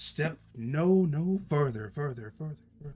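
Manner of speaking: loud, booming, echoing, reverberating voice. Voicing a telepathic voice the players hear in their heads, echoing voice. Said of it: "As it seems to echo but also reverberate".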